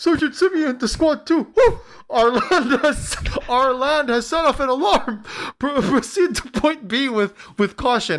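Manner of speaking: high, frightened, scared voice. Voicing a squad radioing its sergeant after an alarm goes off, scared. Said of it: "He sounded scared".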